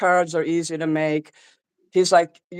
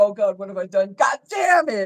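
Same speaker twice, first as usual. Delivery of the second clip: mock, baby-like blubbering and sobbing; 4 semitones higher than usual. Retelling how someone reacted after destroying the card: imitating someone crying like a baby. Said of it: "He cried like a baby".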